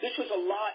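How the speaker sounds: ordinary talk, nothing marked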